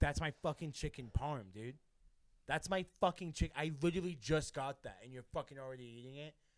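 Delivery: loud, furious, fuming rant. Retelling a roommate confronting Justin over his food, imitating Aiden fuming. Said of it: "this kid's fuming".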